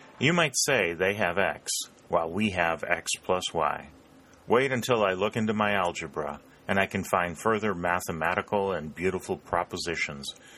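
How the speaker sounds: plain reading voice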